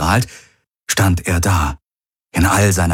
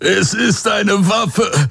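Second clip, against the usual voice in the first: strained, pained, very high gasping; 14 semitones higher than usual. Narrator reading a character's line in a story, gasping in pain. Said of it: "keuchte Hox gequält".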